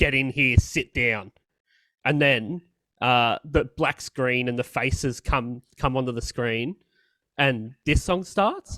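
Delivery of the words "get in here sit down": acted, strict, stern, firm tone. Retelling mum ordering the boys to sit down: imitating a stern command. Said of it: "a stern".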